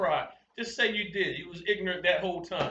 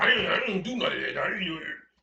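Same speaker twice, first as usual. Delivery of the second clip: sudden, blurted, defensive, protesting tough-guy voice. Mocking the first tough guy who jumped up denying: imitating a tough guy jumping up in denial. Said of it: "the first one that jumped up like".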